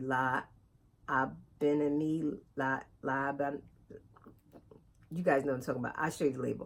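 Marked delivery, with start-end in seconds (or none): 0.0-3.6 very slow, careful, piece-by-piece pronunciation. Speaker pronouncing a yarn name she always says wrong: very slowly. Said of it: "so I'm going to say it very slowly".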